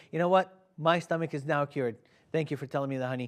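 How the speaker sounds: ordinary delivery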